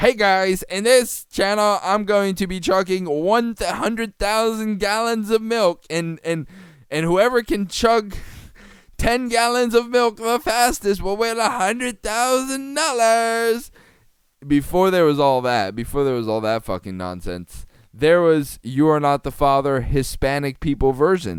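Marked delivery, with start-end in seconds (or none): 0.0-13.7 very high, loud, hype online-host style voice. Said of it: "before there was Mister Beast".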